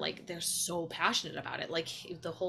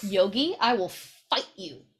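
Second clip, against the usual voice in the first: put-on motherly voice; 3 semitones higher, 9 dB louder than usual. Breaking off to warn Yogi away from her plants, in a mom voice. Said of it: "Mom voice had to come out".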